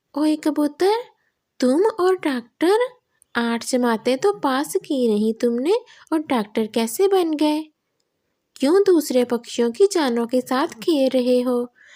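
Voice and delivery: indignant, high-pitched, scolding cartoon parrot voice. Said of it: "दूसरी तरफ [name] तोता अपनी खाला से मिलने उनके घर जाता है। / खाला, मैं सोच रहा हूँ कि इस जंगल में भी एक छोटा सा क्लिनिक खोल लूँ।".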